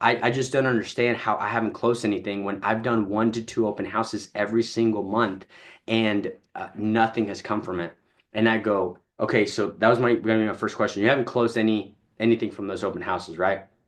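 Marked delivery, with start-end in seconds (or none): none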